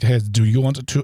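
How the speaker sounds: put-on, attempted German accent. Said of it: "whenever I wanna do a German accent".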